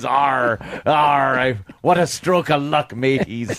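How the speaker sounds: put-on pirate voice. Imagining a pirate ship finding you mid-ocean: pirate voice. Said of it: "And there he is".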